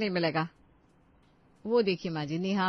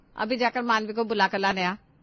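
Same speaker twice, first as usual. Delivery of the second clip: plain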